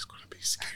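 soft mock ASMR whisper, like an ASMR video.

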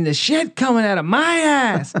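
mock, very high, stretched hollered outburst. Retelling yelling from the bathroom during a phone call: retelling his own yell. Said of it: "So I just yelled out".

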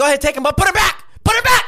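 very high, rising, climbing shout. Venting to another speaker about people taking pens, yelling. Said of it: "Who are you yelling at?".

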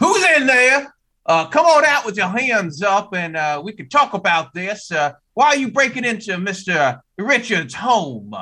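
projecting, carrying voice. Crouched with a gun, calling to whoever broke into the home, projecting voice. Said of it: "so I'm projecting my voice".

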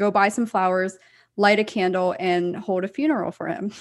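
normal talking voice

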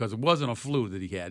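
normal talking voice

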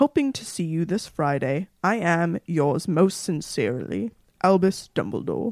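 pompous put-on voice. Reading a letter aloud as another speaker asked: Dumbledore voice. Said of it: "can you read it like Dumbledore".

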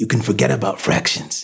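ordinary delivery, nothing marked

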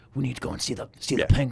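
quiet hushed voice. Describing how he talks without shouting, quoting his line in a hushed tone. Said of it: "sort of hushed tone".

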